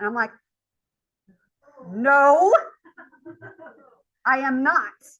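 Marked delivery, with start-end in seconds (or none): 1.9-4.9 loud, high, argumentative retorting tone. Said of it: "arguing with him".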